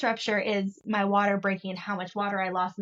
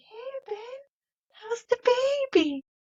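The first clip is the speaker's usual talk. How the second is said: very high, out-of-it, drugged-up voice. Retelling coming out the door all drugged up: imitating drugged-up speech. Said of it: "I come out all drugged up".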